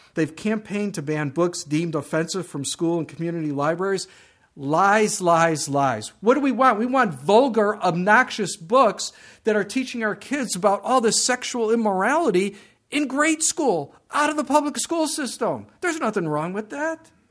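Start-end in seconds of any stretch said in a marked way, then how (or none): 6.2-16.9 heated, pitched-up, worked-up, getting upset. Speaker sarcastically voices what book-ban campaigners want, getting upset. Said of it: "Sorry, I get a little upset over that".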